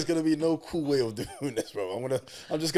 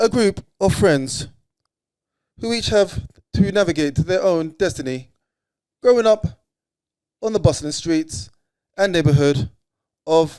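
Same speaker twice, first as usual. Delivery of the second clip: robotic ai assistant voice, higher and louder; 3 semitones higher, 9 dB louder than usual. Reading a film synopsis aloud when asked to: reading like Siri. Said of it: "read it like your Siri".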